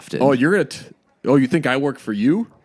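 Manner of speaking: put-on cocky actor voice. Showing a friend an impression of John Hamm's typical movie lines: John Hamm impression. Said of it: "here's my impression of John Hamm".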